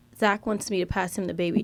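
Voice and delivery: put-on whisper. Retelling what the nanny whispered while holding the baby: imitating a whisper.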